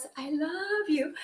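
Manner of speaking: gentle, soft, quiet woman's voice. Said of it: "Start with woman's soft voice".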